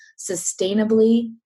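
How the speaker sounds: sustainably hit with heavy stress. Explaining what wild crafting is, with stress on 'sustainably'. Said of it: "I'm going to stress that word sustainable".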